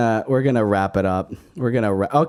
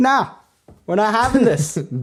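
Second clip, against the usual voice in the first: put-on Brooklyn accent, much higher pitch; 12 semitones higher than usual. Telling a story about potatoes fighting a ban, speaking as the potatoes in a Brooklyn accent. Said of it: "but they have a Brooklyn accent".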